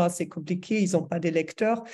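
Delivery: ordinary delivery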